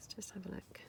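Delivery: unvoiced, whispered aside.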